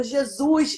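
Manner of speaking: tearful outcry through sobs, crying. Retelling hearing the heartbeats of triplets: retelling own crying exclamation. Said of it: "E eu chorando, chorando".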